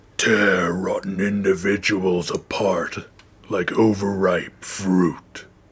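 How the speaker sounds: slow, goofy, silly put-on monster growl. Playing the original recording of a monster's line: silly monster voice. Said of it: "it's just me doing a silly voice".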